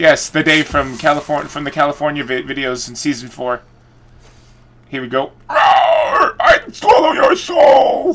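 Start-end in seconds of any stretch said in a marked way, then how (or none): 5.5-8.1 very high, very slow, drawn-out delivery. Repeating a catchphrase that the Dave used to say: imitating the Dave's catchphrase. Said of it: "the Dave used to say".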